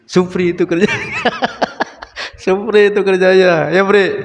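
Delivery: high, loud talk through laughter.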